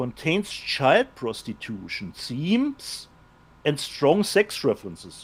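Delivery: hushed, low, quiet, very slow and deliberate. Reading a film's age rating aloud to another speaker, said quietly. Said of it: "I love that you said that, like, quietly".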